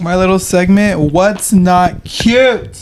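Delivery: shouting. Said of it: "Why are we yelling?".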